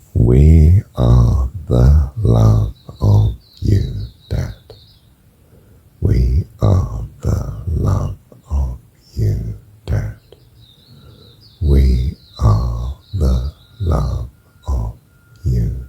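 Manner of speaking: phrasing timed to each breath. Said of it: "I'm gonna do it to the breathing".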